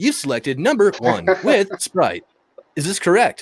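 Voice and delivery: high, mechanical, robotic automated machine voice. Retelling taking a customer's order, the speaker plays an actual machine: robotic machine voice. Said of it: "I was an actual machine".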